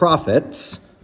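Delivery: the word profits given heavy stress. Speaker explaining a dog-breeding business split, with stress on 'profits'. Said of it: "I stress the word profits".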